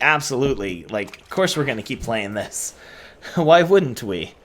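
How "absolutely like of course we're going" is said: ordinary delivery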